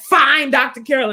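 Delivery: mock attitude-filled tone. Retelling how someone answered the speaker's advice, imitating a reply with attitude. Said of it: "you can do it with an attitude".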